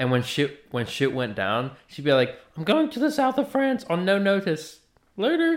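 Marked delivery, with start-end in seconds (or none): 2.6-5.6 put-on very high, sassy British old lady voice. Retelling how an old lady character ducks out of trouble: imitating old british lady sass. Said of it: "that old British lady sass".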